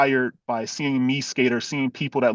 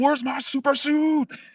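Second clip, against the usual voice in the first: very high, calling-out superhero character voice; 14 semitones higher than usual. Answering a request to do a Frozone line: Frozone voice. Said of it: "Can you give us some Frozone?".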